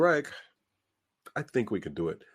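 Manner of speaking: pause with audible inhale before "I think". Quoting someone's reply about whether it can be done: breath and pause before I think. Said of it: "did you hear me take a breath before I said that?".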